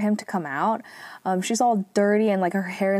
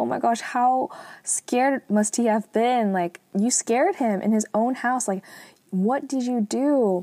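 put-on, tearful, bawling, sobbing wail; 4 semitones higher than usual. Retelling a fan's words while she cried: imitating someone bawling. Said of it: "she's just, like, bawling".

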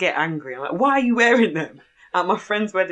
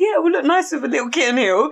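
pitched-up, teasing, mocking tone; 9 semitones higher, 4 dB louder than usual. Retelling how someone chimed in to make fun of Mom, retelling a mocking remark. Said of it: "But she's taking the mick out of Mom".

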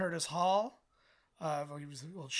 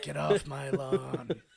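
growled slowly and loudly; 5 dB louder than usual. Showing off an impression after praise, doing a Clint Eastwood impression. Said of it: "great at it".

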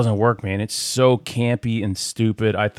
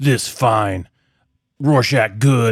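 super fake, exaggerated, very deep put-on voice; 3 dB louder than usual. Complaining about an actor's take on a comic character, mocking Rorschach impression. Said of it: "drops his pronouns".

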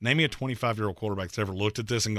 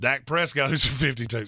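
words broken up by giggles, laughing; 3 semitones higher than usual. Speaker listing the highest-paid quarterbacks, laughing while speaking. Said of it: "I can't say that without laughing".

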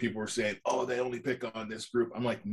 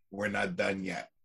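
new york gangster voice, much lower; 3 semitones lower than usual. Quoting a favorite Kylo Ren line from The Force Awakens, Kylo Ren as New York gangster. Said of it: "He becomes this New York gangster".

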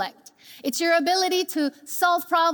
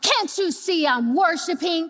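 play-acted snarling, irritated and angry. Retelling a woman at church interrupted while worshiping, retelling an angry snarl. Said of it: "she snarled".

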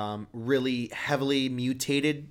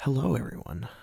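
comically sultry, exaggerated, overdone sensual seductive voice. Challenged to speak as sensually and comically as possible, the speaker greets everyone sensually. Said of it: "sensual voice".

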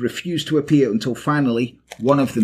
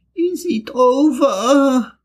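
timid, meek, very high little voice, over drawn out; 13 semitones higher, 4 dB louder than usual. Stirring as if from deep sleep after the demons left, she asks meekly. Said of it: "That was my meek voice".

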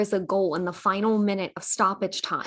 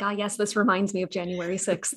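ordinary talk, nothing marked

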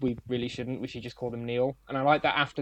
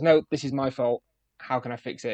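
ordinary talk, nothing marked

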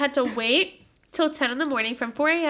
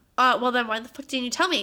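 usual speaking voice

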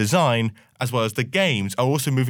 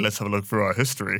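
deep, dramatic, epic movie-trailer voiceover; 4 semitones lower, 3 dB quieter than usual. Speaker recapping Call of Duty history repeats his phrase, in a Battlefield trailer narrator voice. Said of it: "I sound like the Battlefield trailer we just watched".

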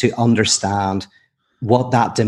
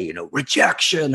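visceral, possessed, demon-like voice; 4 semitones higher than usual. Recalling what a man would say when asked his name, demonic voice. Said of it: "in a demonic voice".

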